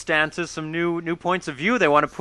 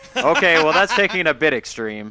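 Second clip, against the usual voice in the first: ordinary talk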